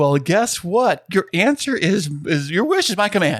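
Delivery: TV pitchman infomercial sales announcer voice. Announcing a new feature to the other speaker: infomercial announcer voice. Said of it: "you sound like an infomercial man right now".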